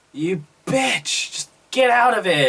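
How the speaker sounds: sudden, high, angry little outburst. Retelling Brie telling someone to leave: imitating Brie's angry outburst. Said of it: "this little outburst from Brie".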